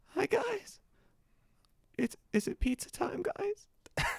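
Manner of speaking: very high, soft puppy-dog voice. Asked to give their best puppy dog voice, high soft puppy dog voice. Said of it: "give us your best puppy dog voice".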